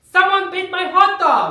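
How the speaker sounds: loud, high-pitched yelling. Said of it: "a random shirtless guy yelling".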